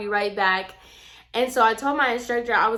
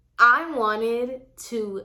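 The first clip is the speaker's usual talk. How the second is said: ordinary talk, nothing marked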